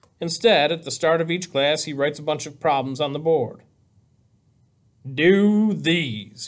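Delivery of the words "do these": deep, low, sarcastic, mocking tone. Narrator reads the teacher handing the class problems, deep, sarcastic voice. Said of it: "he says in his deep, sarcastic voice".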